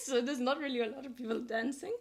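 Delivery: voice cracking and breaking. Describing a quiet lounge bar to another speaker, voice cracking. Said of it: "my voice is breaking".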